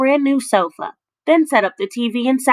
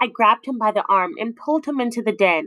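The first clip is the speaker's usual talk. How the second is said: ordinary delivery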